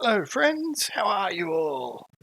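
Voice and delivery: decidedly chirpy small voice, high and swooping. A narrator voices a newcomer greeting the group in the Sly Wink, chirpy little voice. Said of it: "you hear a decidedly chirpy little voice".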